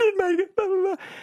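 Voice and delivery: high-pitched fake sobbing. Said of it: "fake crying".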